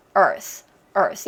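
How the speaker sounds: American pronunciation. Showing learners the american way to say the word: american pronunciation. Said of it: "미국식 발음을 할 때는".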